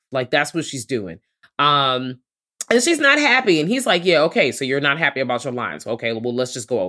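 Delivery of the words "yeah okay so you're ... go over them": put-on dismissive tone. Retelling a scene, the speaker mimics a man brushing off a woman's complaint, mock-dismissive. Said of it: "Real dismissive and shit".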